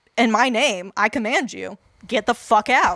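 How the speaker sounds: put-on commanding voice. Retelling how Jesus casts out demons: imitating Jesus commanding a demon. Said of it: "his way of doing exorcisms is literally just be like".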